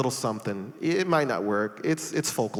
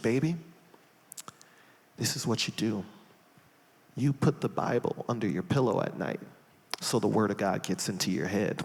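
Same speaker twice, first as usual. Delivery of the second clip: earnest, sincere whisper; 3 semitones lower, 4 dB quieter than usual. Retelling a church mother's advice at the altar: imitating Sister Claudia whispering. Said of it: "she whispered in my ear and she goes".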